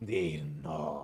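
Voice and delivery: demonic tongue, abyssal demon speech. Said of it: "the tongue of the abyss, like, demons speak".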